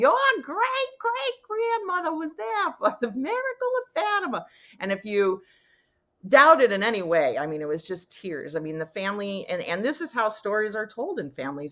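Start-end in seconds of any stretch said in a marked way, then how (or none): 0.0-4.5 put-on very high-pitched Boston accent. Retelling what grandma always said about family history: Boston accent. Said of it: "my grandma in her Boston accent".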